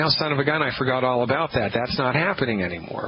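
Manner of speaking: ordinary talk, nothing marked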